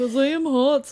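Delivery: put-on failed German accent. Voicing a man lured to the forest: bad German accent.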